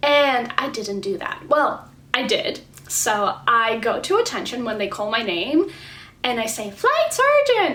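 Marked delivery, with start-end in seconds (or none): 6.7-7.7 squeaky, very high-pitched voice. Retelling answering at attention when called by name: very high-pitched voice. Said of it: "Very high-pitched voice".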